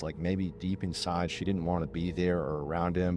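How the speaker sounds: normal talking voice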